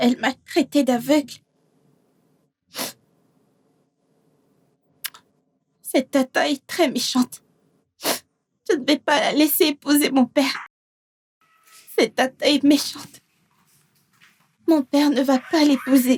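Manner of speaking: tearful, crying while talking. Complaining that the aunt called her blind, crying while talking. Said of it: "Pourquoi tu pleures ?".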